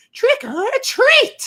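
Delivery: very high, shrill, screaming witch voice. Imitating a talking trick-or-treat bag toy: screaming witch's voice. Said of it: "a witch's voice, just, like, screaming that".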